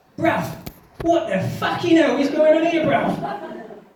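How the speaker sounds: high-pitched, shrill, loud shouting outburst. Retelling a salsa lesson's first embrace, imitating inner voice shouting. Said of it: "just shouting at me".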